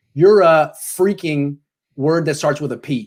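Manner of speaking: ordinary delivery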